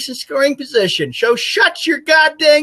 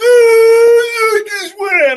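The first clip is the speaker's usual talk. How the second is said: put-on radio announcer voice, higher and louder; 8 semitones higher, 5 dB louder than usual. Mocking an annoying radio announcer's call: imitating John Sterling's call. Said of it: "John Sterling's call".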